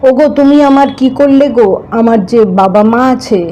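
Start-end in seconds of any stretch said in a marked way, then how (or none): none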